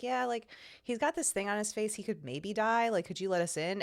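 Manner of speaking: mock relaxed, super chill, no-big-deal offhand delivery. Retelling a movie scene where Dallas reports the problem: imitating Dallas, very chill. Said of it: "he's just, like, so chill about it".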